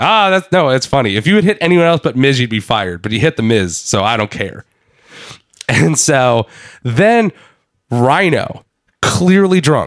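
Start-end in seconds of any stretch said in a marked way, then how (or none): none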